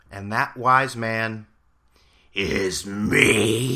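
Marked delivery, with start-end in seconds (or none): 2.3-3.7 very slow, put-on voice drawn out with full drama. Jokingly reading out his own earlier tweet as a wise man: Vince McMahon voice. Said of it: "That's my Vince McMahon voice".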